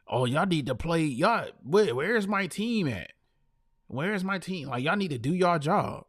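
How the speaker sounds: mock sobbing, whiny crying delivery. Mocking a basketball player complaining about his team: imitating LeBron crying. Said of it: "he's still out here crying".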